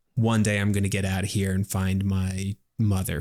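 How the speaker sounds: ordinary talk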